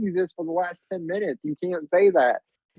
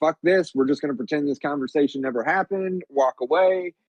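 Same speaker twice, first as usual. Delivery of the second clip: ordinary talk, nothing marked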